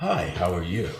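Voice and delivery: acting charming. Retelling greeting an older lady surrounded by big guys, putting on charm. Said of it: "Better charm her".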